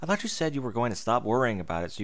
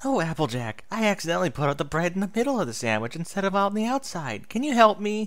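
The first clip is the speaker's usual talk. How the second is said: voice flipping up into a very high falsetto; 9 semitones higher, 4 dB louder than usual. Spike retells a scene to two ponies, doing Twilight's voice in falsetto. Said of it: "His voice switched to a falsetto".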